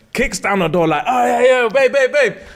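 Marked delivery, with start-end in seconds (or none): 1.1-2.4 play-acted, swaggering, confident, pitched-up cocky voice. Retelling how he came in and kicked down the door: imitating a confident greeting. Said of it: "bops to his room with confidence".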